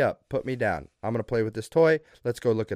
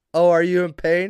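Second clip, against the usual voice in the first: mock taunting voice, higher and louder; 6 semitones higher, 6 dB louder than usual. Retelling how Gracie reacted to her mom's pain, imitating Gracie mocking. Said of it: "She laughs in her mom's face like a sociopath".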